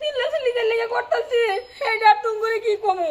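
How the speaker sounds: high, tearful, sobbing crying voice.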